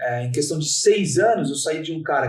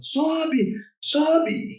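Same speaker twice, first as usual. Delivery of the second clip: mock shouted coach-style yell, very high pitch; 12 semitones higher than usual. Retelling how the coach yelled from the sideline: imitating a coach yelling. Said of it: "meu treinador gritava".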